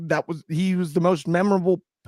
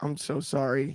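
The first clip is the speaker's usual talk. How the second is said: quiet, hushed tone; 3 semitones lower, 8 dB quieter than usual. Mocking another speaker's sad tone: mock funeral voice. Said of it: "the voice someone would use when they're at a funeral".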